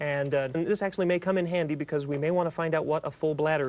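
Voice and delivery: ordinary talk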